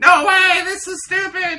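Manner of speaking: very high, shrill, indignant, angry crowd shouting. Voicing an upset crowd after a race result: crowd shouting. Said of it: "different voices from the same basic regions all shout".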